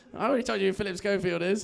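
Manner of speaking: plain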